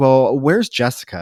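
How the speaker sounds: ordinary talk, nothing marked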